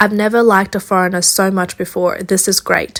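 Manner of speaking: normal talking voice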